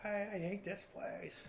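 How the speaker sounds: put-on high, slow, whiny toddler wail.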